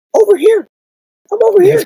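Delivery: put-on tiny, very high little girl voice. Retelling hearing a voice from a doll head: imitating a little girl's voice. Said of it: "I hear a little girl's voice go".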